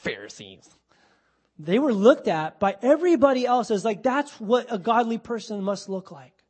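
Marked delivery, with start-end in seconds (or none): 0.0-0.7 sneering, scornful, dismissive tone. Showing how we always poo-poo the Pharisees: scornful 'Pharisees'. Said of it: "we always poo-poo the Pharisees. Oh, Pharisees. We kind of say it like that".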